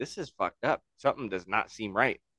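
normal talking voice

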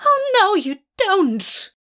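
shrill, very high shriek. Narrator reads Aziraphale's line as he swings the stick at Burgess, screeching. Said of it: "Aziraphale screeches".

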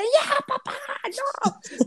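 mock frantic, very high-pitched yell. Retelling a childhood shout at dad to stop teasing: imitating a frantic yell. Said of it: "le gritaba así de".

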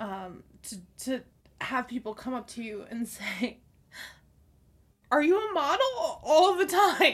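pretend choked-up, tearful voice. In a mock heartfelt speech, sounding mock choked-up. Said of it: "sorry if I'm getting choked up".

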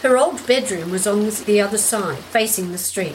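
ordinary delivery

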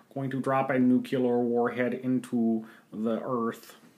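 sinister, scheming movie villain voice. After the listener says he's slipping into Dr. Evil, repeating the line: Dr. Evil impression. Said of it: "I was getting there. I was just working on it".

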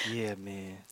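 mock laid-back cool guy voice. Showing how cool the brother sounds, in Eli's voice. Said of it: "he sounds so cool".

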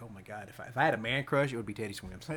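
normal talking voice

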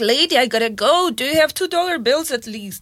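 ordinary talk

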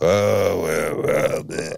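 put-on grumbling voice. Retelling a phone call with the father, imitating him. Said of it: "You sound just like him".

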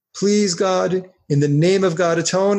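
ordinary delivery

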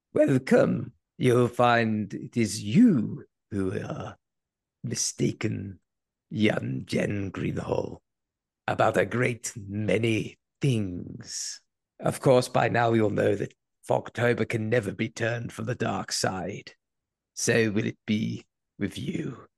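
croaky, hoarse put-on voice. Delivering a welcome speech to a named listener, in a croaky put-on voice. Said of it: "I am the croaky voice Senate".

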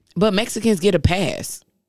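ordinary delivery

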